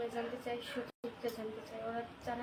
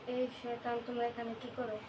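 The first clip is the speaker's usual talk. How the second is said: plain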